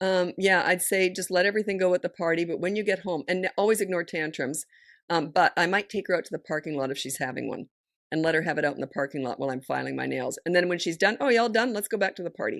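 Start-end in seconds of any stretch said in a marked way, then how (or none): 11.2-12.6 breezy, assured, casual, matter-of-fact, already decided. Giving advice on a child's tantrums, the speaker demonstrates the line, matter-of-fact, like it's happening. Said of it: "Watch your voice with that situation".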